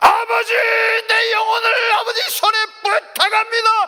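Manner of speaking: high, loud crying shout.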